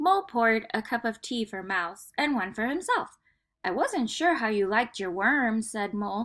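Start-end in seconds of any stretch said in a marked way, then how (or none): none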